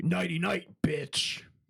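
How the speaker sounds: acted sinister villain voice. Showing the other speaker a line he has, doing a Freddy impression. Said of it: "Are you trying to do like a Freddy?".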